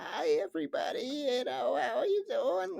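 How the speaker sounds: put-on very high, creaky elderly woman voice. Imitating a character's voice as she walks in: put-on old-lady voice. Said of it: "this old bitty accent ... Like that voice".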